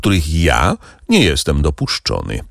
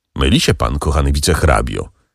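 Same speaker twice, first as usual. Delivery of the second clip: ordinary delivery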